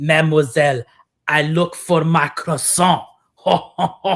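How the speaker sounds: put-on, fake French accent. Imagining calling room service in the morning; fake french accent. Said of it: "you try to pretend you're one of them".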